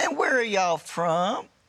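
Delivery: sugary-sweet, friendly, high voice. Retelling how a grandmother greets everyone at a game: imitating a sweet grandmother. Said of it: "It's just as sweet as could be".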